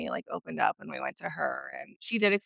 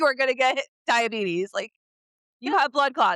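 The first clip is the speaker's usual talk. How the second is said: put-on yell, higher and louder; 6 semitones higher, 4 dB louder than usual. Retelling a doctor's appointment about twins: imitating a doctor yelling. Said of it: "yelled at me for having twins".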